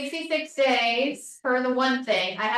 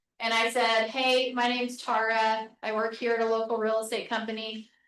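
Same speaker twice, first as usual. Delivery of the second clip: plain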